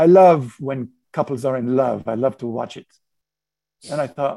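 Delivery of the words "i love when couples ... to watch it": put-on French-accented voice. Retelling what a man replied when accused of watching the couple, in a French accent. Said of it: "in his French accent".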